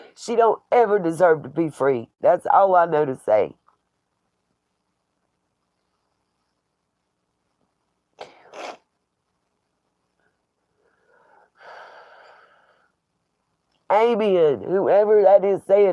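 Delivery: tired, tearful, near-crying voice. Speaking to viewers while reading their comments, teary and tired. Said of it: "because I'm teary eyed and tired".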